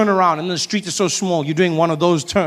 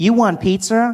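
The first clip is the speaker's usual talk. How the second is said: pitched-up phone voice assistant voice; 5 semitones higher than usual. Retelling a phone assistant answering a call request: Siri voice.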